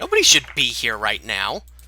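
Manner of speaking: put-on angry character voice. Voicing Balkuma reacting to a knock at the door: voicing Balkuma. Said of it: "you guys hear Balkuma, like, speak up, and he's like".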